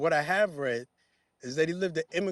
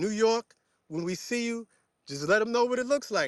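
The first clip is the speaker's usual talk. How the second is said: classic New York accent, higher pitch; 6 semitones higher than usual. Talking to New York in the speaker's own New York accent. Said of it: "I'm saying this in my New York accent".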